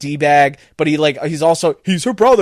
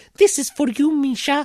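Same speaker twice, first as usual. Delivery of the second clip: put-on woman's voice, pitched much higher; 10 semitones higher, 4 dB quieter than usual. Describing taking out the last flamethrower guy, voicing the line: imitating a woman's voice. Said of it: "that was the best woman I can get".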